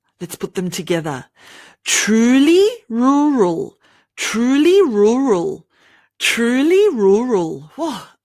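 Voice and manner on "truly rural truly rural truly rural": deliberate, very slow, careful enunciation. Practicing the r and l sounds with a tongue twister, really slow. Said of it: "I'm saying it really slow".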